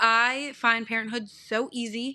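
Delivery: ordinary talk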